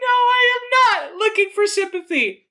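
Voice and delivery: very high, loud, all-caps shouting. Reading aloud a personal ad whose line is written in all caps: shouting in all caps. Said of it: "This is all caps".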